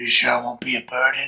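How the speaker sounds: weird little half-whispered voice. Imitating a guy who showed up at the door while traveling: weird little half-whisper voice. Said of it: "doing a weird little whisper voice".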